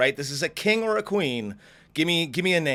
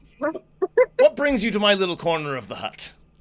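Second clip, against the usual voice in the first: serene, unbothered giant creature voice, pitched up; 5 semitones higher than usual. Voicing a huge horned creature greeting the players: voicing a huge calm creature. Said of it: "And he says".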